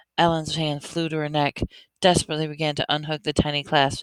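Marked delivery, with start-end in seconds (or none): none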